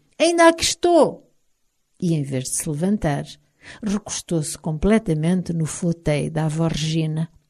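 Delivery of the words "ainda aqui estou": shrill, very high, loud shout. A character in an armchair calls out, shouted.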